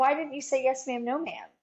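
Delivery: mock upset man's voice. Retelling a man's question in his office, imitating him super upset. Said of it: "he's like super upset with me already".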